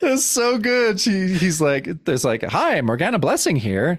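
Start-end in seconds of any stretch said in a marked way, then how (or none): 2.4-4.0 goofy, silly, higher voice. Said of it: "a goofy answering machine message".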